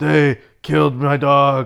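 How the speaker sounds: dead flat, very slow monotone. Retelling the actor's movie line to contrast with good acting: Keanu Reeves impression. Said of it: "and then Keanu Reeves is".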